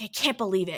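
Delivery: loud, furious stage whisper meant to carry. Retelling a woman whispering to the man with her: imitating a loud angry whisper. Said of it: "whispering angrily but loudly".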